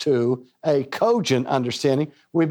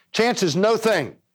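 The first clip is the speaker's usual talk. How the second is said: sped-up, quick, pitched-up delivery; 6 semitones higher than usual. Speaker repeats a phrase to make a point, now saying it faster. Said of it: "Let me say it faster".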